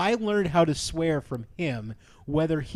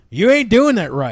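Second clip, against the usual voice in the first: mock, very loud, scolding fatherly voice; 4 semitones higher, 9 dB louder than usual. Retelling what dad would say: imitating dad scolding. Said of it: "worried about my dad going".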